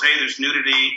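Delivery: ordinary delivery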